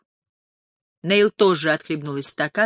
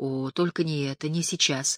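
plain

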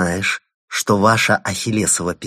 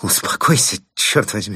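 strained, words squeezed and forced out. Insulted, a man straightening his tie replies: forced out. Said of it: "выдавил де Плезен".

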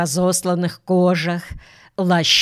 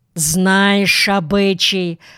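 angry, crossly. Keul, the eldest of the three, frowning, speaks angrily. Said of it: "сказал он сердито".

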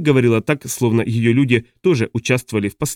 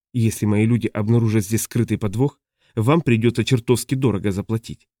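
ordinary delivery

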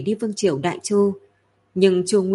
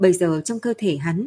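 ordinary delivery

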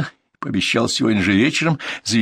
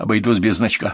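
ordinary delivery

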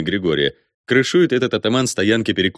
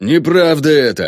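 desperate, high, loud howling yell; 6 semitones higher, 5 dB louder than usual. Dmitro, in front of the ataman and the crowd, a desperate yell. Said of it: "отчаянно вопит Дмитро".

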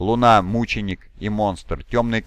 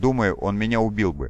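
ordinary delivery, nothing marked

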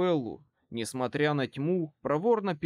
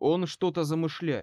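plain reading voice

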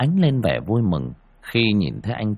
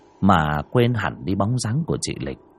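usual speaking voice

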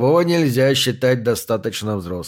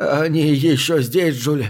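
trembling, quavering, shaky voice; 2 semitones higher than usual. The narrator reads a man lying in bed asking his nurse a question, trembling voice. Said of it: "дрожащим голосом разговаривал".

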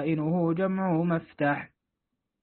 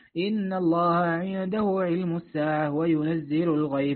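plain

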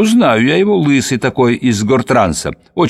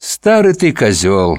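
almost tender, gentle, affectionate tone; 3 semitones lower than usual. Reading a story, voicing a woman answering a man who reaches for her hand: almost tenderly. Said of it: "отзывается она почти ласково".

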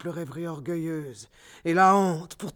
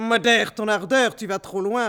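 jeering, mocking tone in a raised voice; 4 semitones higher, 6 dB louder than usual. A man answers the woman who bit his lips as he kissed her, mocking.

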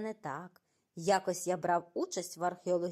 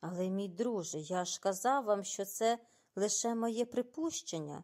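usual speaking voice

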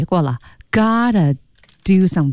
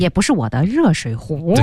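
usual speaking voice

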